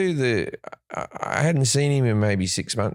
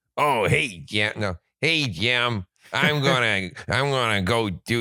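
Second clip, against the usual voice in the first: voice dropped right down very low. Imitating Nick Daly, who played Rodney, talking to Jim: lower-voiced Nick Daly impression. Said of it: "Nick speaks a lot lower like this".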